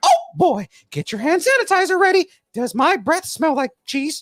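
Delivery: very high-pitched squeaky voice. Reading a joke someone else wrote for them, the speaker does a Mickey Mouse voice. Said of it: "stupid Mickey voice jokes".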